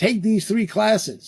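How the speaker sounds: put-on, high, cynical, sarcastic voice. Acting out a reviewer checking off a performance goal: sarcastically acting out a reviewer. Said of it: "I'm gonna be very sarcastic and cynical".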